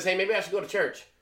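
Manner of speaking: plain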